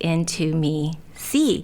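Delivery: intimacy pronounced split apart as into me see.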